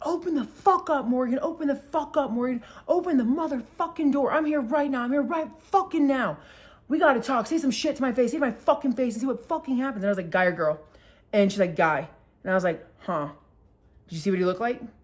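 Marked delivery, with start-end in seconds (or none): 0.0-10.0 mock enraged man screaming, high-pitched. Retelling a man a neighbor heard screaming at the speaker's door: retelling a screaming man. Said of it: "screaming like".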